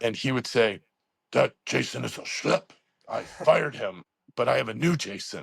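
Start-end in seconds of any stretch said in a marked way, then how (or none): 1.3-5.4 very strong, creaky, rough-edged voice. Retelling what Kowalski said at the school the next day, imitating his strong voice. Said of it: "he had this very strong voice".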